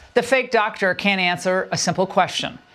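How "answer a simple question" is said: ordinary talk, nothing marked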